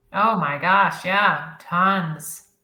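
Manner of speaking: sarcastic, with obvious irony. Answering a question about nonprofit budgets for professional development: sarcastic. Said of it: "I'm being sarcastic".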